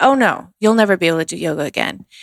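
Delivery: mock-blunt, put-on blunt delivery. Recounting the doctor's reply to a question during rehab: retelling a blunt remark. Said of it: "he said it so bluntly, exactly like that".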